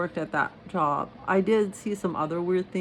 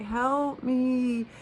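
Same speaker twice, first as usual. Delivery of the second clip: put-on, loud, desperate yell; 8 semitones higher than usual. Telling a friend about a person outside who kept crying out for help; imitating a yelled desperate plea. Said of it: "He was like crying".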